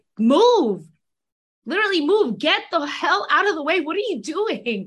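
mock frustrated, exasperated yelling. Retelling watching alone in the living room: retelling own yelling at the tv. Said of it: "yelling at the T V".

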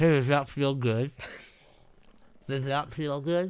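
fake mouth-full speech. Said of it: "it's hard to say that with something in your mouth".

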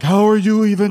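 high, loud incredulous cry, blurted out.

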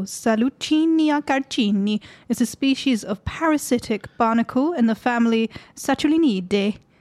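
over-the-top, exaggerated, put-on Italian accent. Reading from notes to the other speaker, in a put-on italian accent. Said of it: "I'm just doing all the Latin and Italian accents now".

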